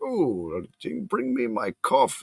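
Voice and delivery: put-on very slow, swooping, old-timey Victorian voice. Speaker describing a movie, quoting a character in an old-timey Victorian voice. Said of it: "he's talking like a Victorian, like an old timey".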